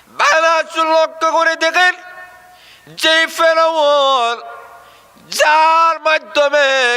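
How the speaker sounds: high, slow, stretched-out preacher-style wail.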